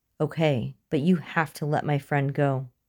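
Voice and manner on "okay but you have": usual speaking voice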